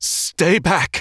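high, trembling, unsteady, quaking voice. Answering a man who calls to him around a tunnel bend, in a quaking voice. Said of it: "his voice quaking".

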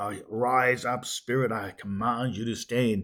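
authoritative, commanding declaration in prayer-like voice. Retelling own past words in a prayer meeting: imitating own past commanding prayer. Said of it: "command our spirit to stand and arise".

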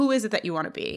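normal talking voice

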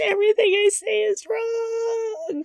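high teary wail.

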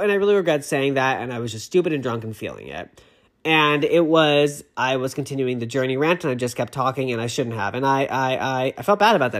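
ordinary talk

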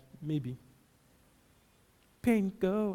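put-on hesitant, guessing manner. A preacher mimics how listeners command pain, mock-hesitant, guessing. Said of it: "you just talk like you're guessing".

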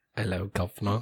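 fake, put-on British accent. Greeting the other speaker to start off: put-on british accent. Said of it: "people like a British accent?".

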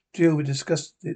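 ordinary delivery

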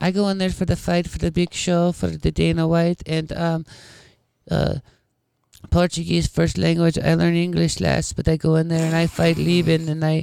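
very high, wimpy, wussy voice. Imitating a fighter who speaks English as a second language: Anderson Silva impression. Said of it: "but you hear him talk, you're like, "This dude sounds like a fucking wuss."".

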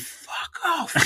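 mock stifled, breathy, whispered yell. Retelling reacting to a penalty being given: imitating own scream. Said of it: "I literally screamed".

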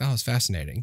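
plain

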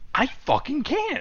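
acted-out, very high-pitched, furious angry outburst. Retelling snapping at a girlfriend who said calm down, mock-angry snapping. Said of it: "calm down".

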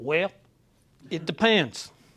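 drawn-out, slow Southern American accent. Answering a wife's complex question: southern drawl. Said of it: "you gotta say it with a southern drawl".

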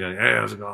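hazy, spaced-out, out-of-it voice. Retelling a music video, imitating a crossfaded guy greeting the camera. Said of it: "he's definitely crossfaded".

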